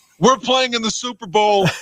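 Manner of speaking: put-on sarcastic tone. Retelling a sarcastic remark made to a Republican friend: mock sarcastic complaint. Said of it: "I said that sarcastically".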